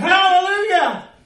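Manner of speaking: high, loud, slow, belted shout. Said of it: "He goes".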